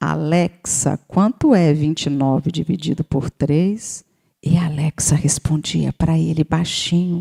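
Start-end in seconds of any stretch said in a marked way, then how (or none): 0.0-4.0 slow, unhurried, deliberate, word-by-word delivery. Retelling a child quietly asking Alexa a math question: imitating a child speaking softly. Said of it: "ele falava baixinho assim".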